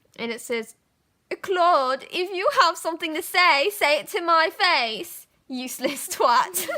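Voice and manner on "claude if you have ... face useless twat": put-on British accent, loud and high-pitched. Reading aloud an old written note: British accent. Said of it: "doing it in the British accent".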